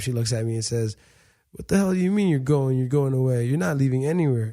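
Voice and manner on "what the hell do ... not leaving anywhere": mock crying, tearful, disbelieving, upset tone. Retelling the sister's words as she started crying: imitating sister crying. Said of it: "She started crying for the first time".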